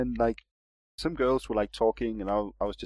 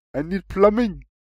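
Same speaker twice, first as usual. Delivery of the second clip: put-on speaks with Syrian accent; 8 semitones higher, 6 dB louder than usual. Acting out a caller from Syria phoning a plumber: stereotyped Syrian caller voice. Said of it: "racist voice".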